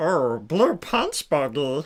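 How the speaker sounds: grungy alien voice, slow, swooping, drawn out. Speaker demonstrating how Stitch sounds compared to Elmo, in a grungy Stitch voice. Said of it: "Stitch is like a more grungy".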